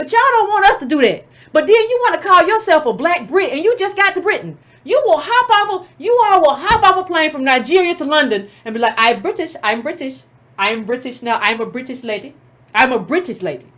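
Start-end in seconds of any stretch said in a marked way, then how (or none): 9.0-13.6 bad, trying-too-hard put-on British accent. Mocking newcomers who claim to be British: mock put-on British accent. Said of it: "Trying to get your accent right".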